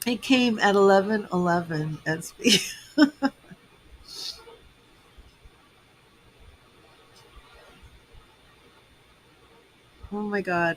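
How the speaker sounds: tearful voice, crying while talking. Talking about a reading that came at eleven eleven, crying while talking. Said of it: "I'm just crying".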